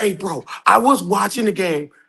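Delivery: hushed whisper. A guest joining late at night with kids asleep, whispering. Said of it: "Why are you whispering?".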